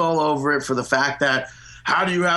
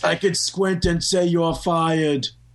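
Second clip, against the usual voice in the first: put-on elderly grandpa-style voice; 2 semitones higher than usual.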